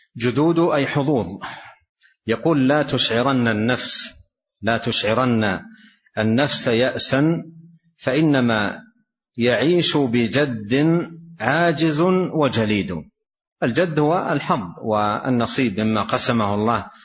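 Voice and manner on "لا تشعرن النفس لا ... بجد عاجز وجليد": normal talking voice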